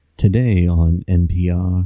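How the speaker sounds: low, slow public radio announcer voice. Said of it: "you talking like that".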